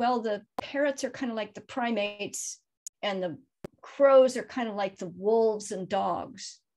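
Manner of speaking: normal talking voice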